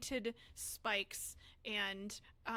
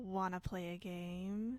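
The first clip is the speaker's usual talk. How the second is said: sly witch character voice, drawn out; 2 semitones lower than usual. Voicing a witch who reappears behind Cricket: voicing a witch. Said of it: "reappears behind Cricket, and goes".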